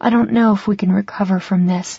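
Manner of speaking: plain reading voice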